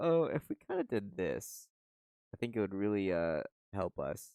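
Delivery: fake-helpful, sarcastic, swooping delivery. Retelling suggestions made to coworkers at a kitchen job: retelling a sarcastic suggestion. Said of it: "I just love being like sarcastically like".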